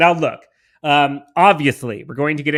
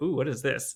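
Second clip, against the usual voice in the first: put-on surprised baby voice, full of wonder, quieter; 11 dB quieter than usual. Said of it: "She's like".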